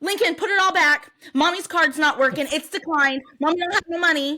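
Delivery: acted little kid voice, blurted. Card declined with a line waiting, retelling Anderson's outburst: imitating Anderson saying it loudly. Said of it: "And so then really loud".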